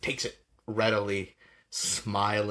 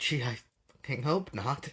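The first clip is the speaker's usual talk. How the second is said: muttered under breath, higher and slower; 4 semitones higher than usual. As the player character leaves, the seller mutters: muttering under breath. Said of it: "he sort of like mutters under his breath".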